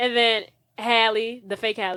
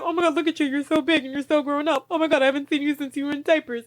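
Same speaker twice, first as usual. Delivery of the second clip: high, mock weepy, overcome tearful gushing; 5 semitones higher than usual. Retelling a woman's reaction at a reunion, imitating tearful gushing. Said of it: "She has like panic attack / crying spell".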